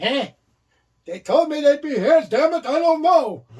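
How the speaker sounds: put-on very high, loud old New York man voice. Doing a bit about waiting at a door, in a New York grandpa voice. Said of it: "that's what I do my uh, New York grandpa voice".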